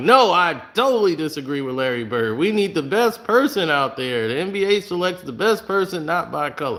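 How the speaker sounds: pissed, mock indignant tone.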